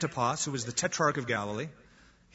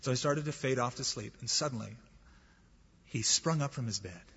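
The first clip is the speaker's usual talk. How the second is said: ordinary talk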